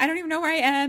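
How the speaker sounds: very high, shrill, very loud panicked freak-out. Retelling a movie scene where a girl talks to 911: imitating someone freaking out. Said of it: "freaking out".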